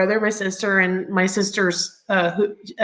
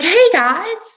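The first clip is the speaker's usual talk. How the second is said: high, loud surfer-dude voice; 11 semitones higher, 6 dB louder than usual. Retelling a visitor arriving to meet her mother, imitating Walter's surfer-dude voice. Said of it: "He talks like a surfer dude".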